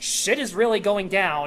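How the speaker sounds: ordinary delivery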